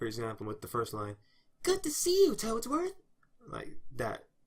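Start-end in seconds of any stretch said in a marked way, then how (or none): 1.6-2.9 own natural voice, pushed very high. Voicing a sample line as Yoshi, own voice raised higher. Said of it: "an unedited voice where it's pretty much my voice but it's higher".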